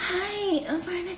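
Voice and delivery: soft, put-on, fake polite voice. Imitating how a woman talked whenever she got together with someone, in her put-on voice. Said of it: "She would put on this fucking voice every time she would get with Barnett".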